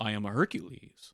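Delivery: slow, accurately spoken, very precisely enunciated voice. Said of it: "really accurately spoken, you know, very enunciated".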